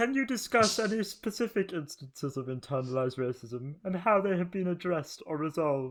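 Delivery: high, loud frog puppet voice. Speaker reading interview questions aloud to the group: Kermit voice. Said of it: "What's that voice? ... it sounds like a Kermit voice".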